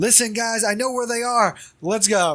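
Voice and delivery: mock yelling, high-pitched, typical American tourist manner. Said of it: "I'm just yelling like the typical".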